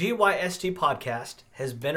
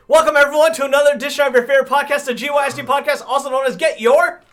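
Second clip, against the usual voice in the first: very fast, very loud, high, rushed delivery; 12 semitones higher, 12 dB louder than usual. Podcast host welcoming listeners to another episode, very fast. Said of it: "you said that way too fast".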